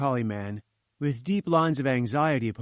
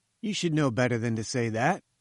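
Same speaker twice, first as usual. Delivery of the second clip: plain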